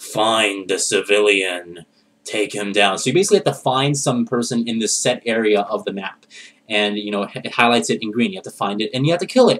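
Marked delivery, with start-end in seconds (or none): 0.0-3.0 low, deep, slow game-guide voice. Describing a video game, quoting the in-game guy who gives orders, in a deep voice. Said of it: "in like this deep voice".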